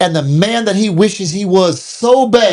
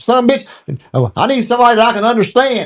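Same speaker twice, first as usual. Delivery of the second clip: slangy Southern drawl in a man's voice; 3 semitones higher than usual.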